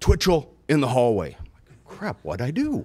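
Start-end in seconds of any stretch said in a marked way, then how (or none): 0.0-1.3 mock big, booming, upset bellow. Acting out the upset principal calling a teacher into the hallway, imitating Principal Heller's booming voice. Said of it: "can have that booming voice if he wants it".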